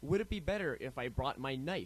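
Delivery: plain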